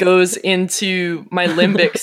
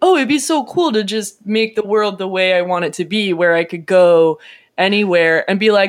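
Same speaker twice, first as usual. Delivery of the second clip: plain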